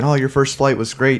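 ordinary talk

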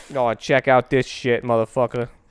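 put-on New York accent. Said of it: "It's his New York accent".

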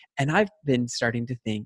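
ordinary delivery

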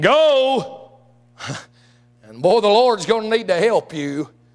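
dry, mocking, sarcastic, drawn-out delivery. Retelling Saul sending David off to fight: imitating Saul's sarcasm. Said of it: "I can almost hear the sarcasm at the end of that from Saul".

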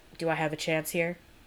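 ordinary delivery

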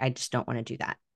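ordinary delivery

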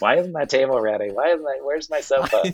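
high, demanding yelling. Retelling designers yelling at the carpenters: imitating someone yelling. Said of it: "yelling at the carpenters".

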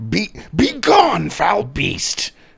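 very high, raw, rasping, swooping scream. Tabletop player acting out his character Urpax confronting a beast, Urpax screaming. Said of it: "starts screaming".

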